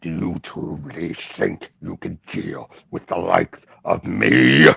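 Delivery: voice dropped deep and soft, then roughened. Showing off a Grodd voice, taunting someone as Gorilla Grodd. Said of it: "show off my Grodd voice".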